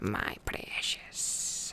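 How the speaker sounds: terrible hissing creature voice in a breathy whisper. Reading a story aloud, the narrator voices Gollum's words: terrible Gollum impression. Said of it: "you're gonna have to deal with my terrible impression".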